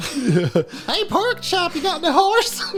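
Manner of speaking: put-on very high-pitched, goofy cartoon kid voice. Asked for a line from the show, the speaker does a Skeeter voice. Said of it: "give me a line to say a Skeeter".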